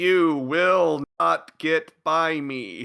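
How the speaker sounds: put-on grand, theatrical, very dramatic delivery. Quoting Siriusmon's line from the next episode, in a very dramatic voice. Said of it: "he said in a very dramatic voice".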